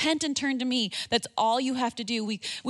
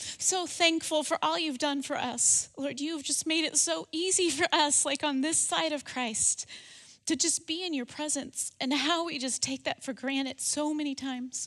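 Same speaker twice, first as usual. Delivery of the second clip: choked-up, emotional voice catching; 3 semitones higher, 4 dB quieter than usual. Praying aloud over the listeners, getting emotional. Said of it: "I'm getting emotional".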